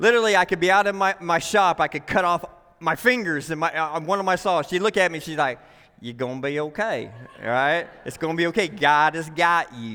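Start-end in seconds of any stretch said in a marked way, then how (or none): 6.0-9.9 put-on rural country accent, much lower. The speaker quotes a woman who always reassures the speaker, in a country accent. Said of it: "she has a country accent when she says it".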